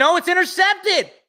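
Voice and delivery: very high-pitched, loud shout. Announcer calling a football play live, yelling. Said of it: "I didn't mean to yell".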